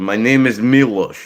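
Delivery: fake, put-on Russian accent. Speaker showing the accents they can do, Russian accent. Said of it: "I do a Russian accent".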